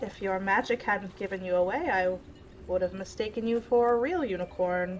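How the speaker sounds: gentle, calm, soothing voice, spoken quickly. Narrator voices a voice heard inside a character's mind, in a calm, soft voice. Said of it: "a very calming, soft voice".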